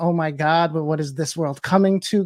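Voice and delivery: mock distressed, upset crying out. Retelling how upset people reacted online: imitating upset people crying out. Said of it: "people started crying".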